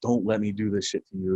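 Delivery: put-on whisper. Speaker retells what a man whispered in their ear: retelling a whisper. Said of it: "he like whispers".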